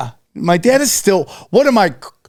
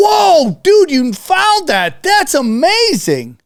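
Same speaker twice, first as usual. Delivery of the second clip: excited TV show voice, higher pitch; 8 semitones higher than usual. Reacting to another speaker finding something: California Gold voice. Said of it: "California gold voice you just did?".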